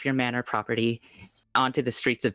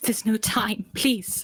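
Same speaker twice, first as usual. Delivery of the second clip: frightened, panicked, very high-pitched voice; 10 semitones higher than usual. Voicing a mother urging her child to flee: panicked voice. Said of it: "in a panicked voice says".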